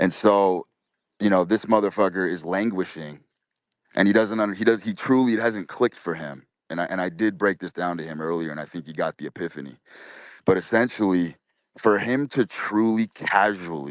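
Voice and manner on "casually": emphasis on "casually". Explaining to listeners what another man has not yet grasped: stress on 'casually'. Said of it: "I want to emphasize the word casually".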